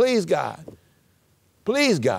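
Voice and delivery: mock begging plea, swooping, rising and falling. Reading Deuteronomy aloud, the speaker acts out the plea to the Lord, mock-begging. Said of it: "God's begging".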